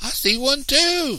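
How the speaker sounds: very high, stretched-out, drawn-out shout. Christopher John, running through the forest with the others, shouting. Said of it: "shouted Christopher John".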